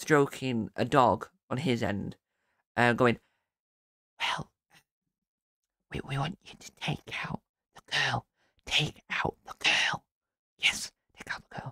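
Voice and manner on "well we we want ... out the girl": hushed, soft, breathy whisper. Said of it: "the bloke whispering at the other end".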